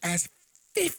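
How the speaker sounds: ordinary delivery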